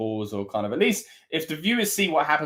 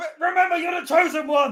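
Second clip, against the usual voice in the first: high-pitched put-on Scottish brogue; 4 dB louder than usual. Urging Drew on while watching a match: Scottish accent. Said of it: "Was that your Scottish accent?".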